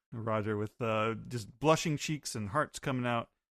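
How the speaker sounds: ordinary talk, nothing marked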